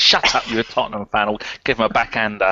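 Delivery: ordinary delivery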